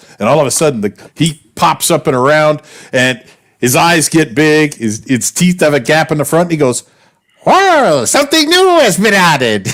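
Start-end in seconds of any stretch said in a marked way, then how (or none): 7.4-9.7 very high squeal, swooping wildly. Retelling a cartoon scene where the dog pops up: Jerry Colonna impression. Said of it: "it's a straight up Jerry Colonna impression".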